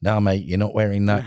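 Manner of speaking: put-on Australian accent, matey bloke talk. Quoting a man's reply to a paramotor student, in a put-on Australian accent. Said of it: "that's my Australian accent".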